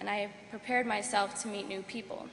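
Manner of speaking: ordinary talk, nothing marked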